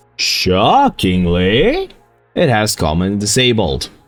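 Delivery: heavy, slow, drawn-out, swooping mock surprise, sarcastic. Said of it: "I hope the sarcasm came through".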